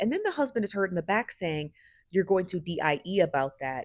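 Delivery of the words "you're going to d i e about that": ordinary talk, nothing marked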